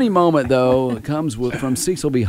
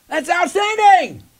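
very high-pitched shouted yelling; 4 dB louder than usual. Acting out a text message read as yelling: imitating someone yelling. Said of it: "not like you're going".

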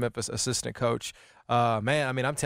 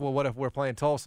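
plain

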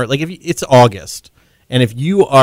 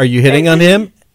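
usual speaking voice

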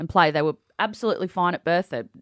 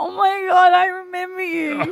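mock drunk voice, higher pitched; 13 semitones higher, 3 dB louder than usual. Retelling how a friend approached a stranger at a party: imitating a tipsy friend. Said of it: "she was very tipsy".

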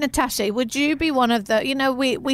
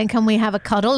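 ordinary talk, nothing marked

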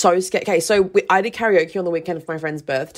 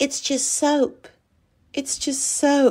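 put-on strange, high, slow, weird, childlike little voice; 8 semitones higher, 3 dB quieter than usual. Retelling what a woman says, in a weird little voice like a 13-year-old. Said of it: "it literally sounds like a 13-year".

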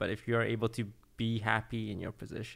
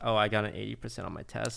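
ordinary talk

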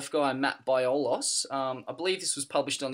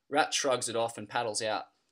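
plain

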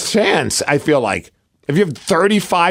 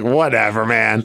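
mock annoyed tone, lower pitch; 8 semitones lower than usual. Retelling how he answered a reporter: imitating an annoyed reply. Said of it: "He sounds so annoyed with that reporter".

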